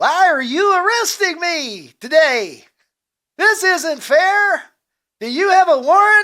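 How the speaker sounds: put-on mascot mouse voice. Acting out a man being arrested, in a Chuck E. Cheese voice. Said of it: "he would have Chuck E. Cheese's voice".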